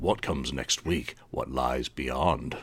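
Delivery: 1950s sci-fi voice. An interviewer riffing on an album title before asking about it, in a 1950s sci-fi voice. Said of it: "I always want to say that in a 1950s sci-fi voice".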